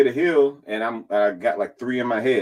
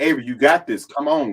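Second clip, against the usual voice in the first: hyped-up, excited cheering voice; 3 semitones higher than usual. The speaker retells hyping up a woman as she went up; retelling hyped-up cheering.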